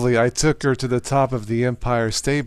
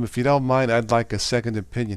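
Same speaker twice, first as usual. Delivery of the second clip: ordinary delivery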